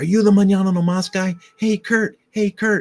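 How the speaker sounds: loud, high female voice calling out.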